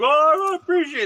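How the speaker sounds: put-on mushy, emotional, very high-pitched voice. Retelling a friend's reply after being congratulated: imitating Eric getting mushy. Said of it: "And then he got all mushy on me".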